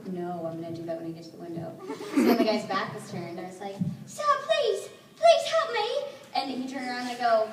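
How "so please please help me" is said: put-on tiny British girl voice, very high, small and loud. Retelling a drive-thru prank, whispering a plea in the Lizzie voice. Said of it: "The little British girl".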